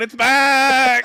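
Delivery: high, loud sheep bleat with back stretched out. Retelling a pizza ad with a sheep: imitating a bleating sheep. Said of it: "the ad is a sheep going".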